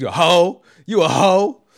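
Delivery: acted-out male scream. Retelling a man screaming at a lady, imitating him screaming. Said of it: "He's just screaming at this lady".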